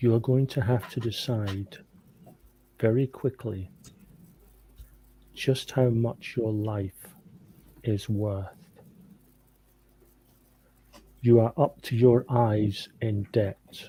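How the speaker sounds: whispered speech. Leaning over to Robert in character with an offer: whispering in his ear. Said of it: "So I'm actually whispering in his ear".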